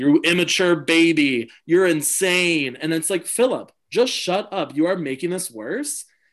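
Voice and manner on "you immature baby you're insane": put-on slow scream with baby drawn out long. Recapping a challenge, the speaker quotes a contestant: imitating Philip screaming. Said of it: "Philip's just like screaming at him".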